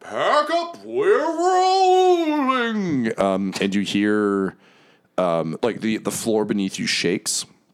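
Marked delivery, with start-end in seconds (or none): 0.1-3.1 roaring shout, much higher pitch, slower. Telling a game scene, a character leans back and roars, roaring shout. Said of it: "leans back and roars in".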